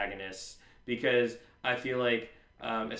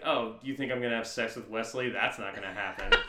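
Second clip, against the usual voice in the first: put-on dismissive voice. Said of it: "you really didn't have to say it in such a dismissive tone".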